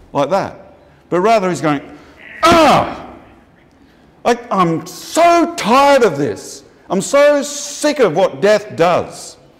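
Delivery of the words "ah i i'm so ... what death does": very slow, high, drawn-out acted vehement groan. Explaining a Bible verse, acting out Jesus's groan: imitating Jesus groaning vehemently. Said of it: "he's vehemently".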